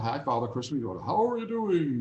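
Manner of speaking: lovely, fine put-on Danish accent. Retelling greeting Father Christmas at a candy handout, Danish accent. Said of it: "in this beautiful Danish accent".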